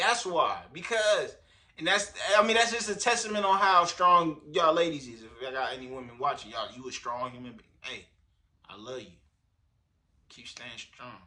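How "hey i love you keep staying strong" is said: breathed-out whisper. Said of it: "My [name] voice".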